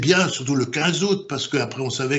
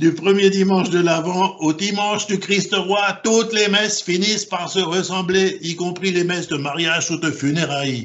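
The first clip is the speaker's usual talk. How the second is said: put-on Alsatian accent throughout; 4 semitones higher than usual. Quoting what a parishioner said to the speaker, in an Alsatian accent. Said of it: "il avait l'accent alsacien, hein, je peux vous le faire si vous voulez".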